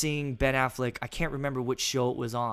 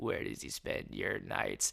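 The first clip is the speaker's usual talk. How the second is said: sleazy, breathy whisper, breathed out; 5 semitones lower, 12 dB quieter than usual. Quoting a favorite movie character's line: Eckhardt voice. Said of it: "he kinda has that voice throughout".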